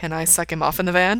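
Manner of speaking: plain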